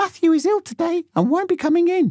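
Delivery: very high, silly, ridiculous mum voice. Phoning school to skip it, pretending to be mum in a ridiculous high-pitched voice. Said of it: "pretending to be my mum in a ridiculous high-pitched voice".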